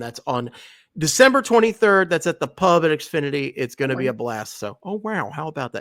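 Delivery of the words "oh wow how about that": put-on celebrity voice, much quieter. After plugging a party, the speaker does an Owen Wilson 'oh wow'. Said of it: "I can say the oh wows uh, back in the Owen Wilson voice too".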